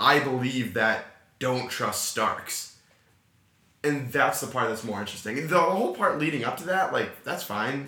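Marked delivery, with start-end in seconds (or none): 0.0-2.7 slow, malicious, no sarcasm. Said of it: "he said it with such malice".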